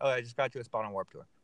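super nonchalant, offhand throwaway delivery. Retelling news someone gave the band: imitating someone super nonchalant. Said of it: "super nonchalant".

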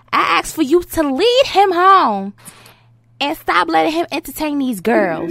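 high put-on woman's voice. Reading out a woman's message aloud: put-on woman's voice. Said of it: "I'm gonna read it in her voice".

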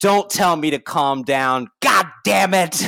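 put-on, almost demonic voice. Recapping a scene, the speaker quotes a woman who almost sounds like a demon. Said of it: "she almost sounds like a demon".

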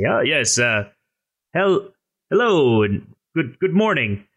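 pleasant, with a big smile. Playing a traveller greeting a man who just said good morning, pleasant with a big smile. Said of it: "be as pleasant as I can and say".

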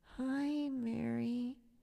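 mock frail, very weak, feeble high voice. Retelling a friend just out of hospital greeting her, imitating a very weak voice. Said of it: "in this very weak voice".

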